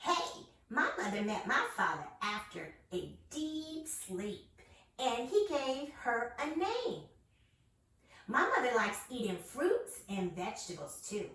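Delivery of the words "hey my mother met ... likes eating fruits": put-on animated, sing-song little child's voice. Host playing a child in a guessing game for listeners: kid voice. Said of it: "I'm gonna give you a kid voice".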